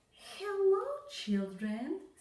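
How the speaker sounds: sweet, very high voice. A woman greets the children on her return, in a sweet voice. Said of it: "someone said in a sweet voice".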